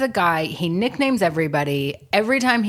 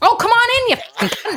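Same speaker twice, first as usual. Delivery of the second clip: put-on furious yelling, higher and louder; 5 dB louder than usual. Retelling a friend driving and losing it at other drivers: imitating George's road rage. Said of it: "absolutely loses it like that with just the driving".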